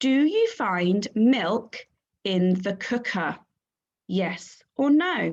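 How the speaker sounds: slow, clear read-along, read aloud together.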